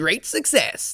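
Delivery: loud, high, terrible put-on Kazakh accent. Imagining a new Borat movie, the speaker quotes him: terrible Borat accent. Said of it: "That's a terrible, terrible accent".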